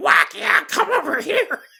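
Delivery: very high, duck-like cartoon voice, coaxing tone. Retelling a cartoon where characters lure a girl into the TV: Donald Duck voice. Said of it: "Donald Duck's like".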